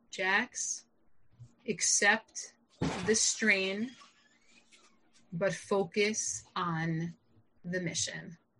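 soft, slow, steady and even-tempered. Retelling one line a brother said, imitating a calm voice. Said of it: "in his very typical, calm way".

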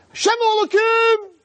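very high, very loud scream.

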